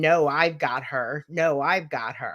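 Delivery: slow, drawn-out voice like a possessing spirit. Retelling what an entity said while possessing her: imitating a Gollum-like voice. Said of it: "in that Gollum-like voice saying".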